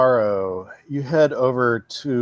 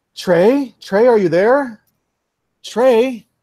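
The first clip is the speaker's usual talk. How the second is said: put-on young woman's voice, much higher and louder; 10 semitones higher, 4 dB louder than usual. Voicing a young woman creeping around houses, calling out for someone: May, young woman calling out. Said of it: "You do hear a young woman's voice".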